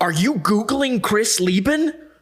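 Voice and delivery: mock, shrill, very high, loud, drawn-out, room-filling call. Retelling what a man said over the speaker's shoulder, retelling a loud remark. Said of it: "he says it loud so the whole room can hear".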